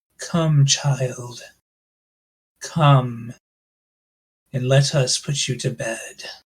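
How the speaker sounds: calm, soothing, lulling murmur. A game master voices a tentacled being speaking to a player's character, in a soothing voice. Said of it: "you hear a soothing voice".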